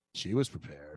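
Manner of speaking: suggestive, sultry, innuendo-laden delivery. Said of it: "so slutty".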